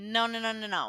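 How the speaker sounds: ordinary talk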